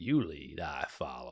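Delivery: very low, soft southern drawl. Retelling a film scene where one actor speaks to another, Matthew McConaughey southern accent. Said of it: "his southern accent".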